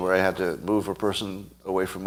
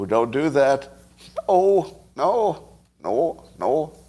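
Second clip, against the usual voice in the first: terrible, clumsy put-on Canadian accent; 4 semitones higher than usual. Speaker imagines canada reacting to u.s. politics, bad canadian accent. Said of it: "I can't do a Canadian accent".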